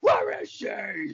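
gravelly wrestler yell.

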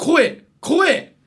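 big loud voice. Pitching your own good point to the audience: big loud voice. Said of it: "でっかい".

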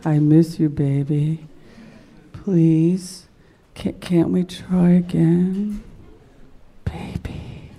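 low, sighing, emotional whisper. Recalling the voice the speaker used to wait for, imitating an emotional whisper. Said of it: "sort of whispering and very emotional".

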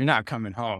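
put-on disgusted voice. Retelling mom's reply after the business failed, mock-disgusted mom. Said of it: "so disgusted".

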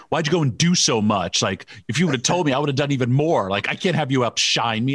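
put-on scolding yell. Recounting how he later yelled at the speaker, imitating someone yelling. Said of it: "he was yelling at me later".

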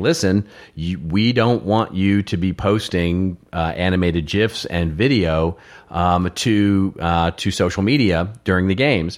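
ordinary talk, nothing marked

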